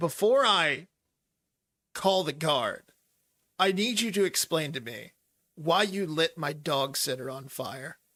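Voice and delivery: angry, grumpy, irritated tone. Voicing a man demanding an explanation: angry and grumpy. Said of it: "He looks kinda angry at Billy".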